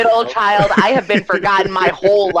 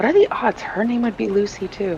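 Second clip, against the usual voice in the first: high, half-whispered muttering under the breath; 5 semitones higher, 4 dB quieter than usual. Narrating Addie walking up the stairs, a half-whispered mumble to herself. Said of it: "just like whispers, or like mumbles to herself".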